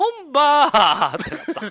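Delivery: 本場 drawn out slowly with high, odd pitch.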